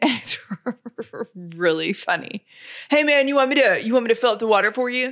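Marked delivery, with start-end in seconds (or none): 2.9-5.1 put-on, laid-back, chill dude-bro voice. Acting out how a guy talks: laid-back bro voice. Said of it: "It's like this like dude, bro".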